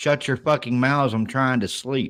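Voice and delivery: normal talking voice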